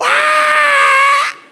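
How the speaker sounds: put-on high-pitched, loud child's scream.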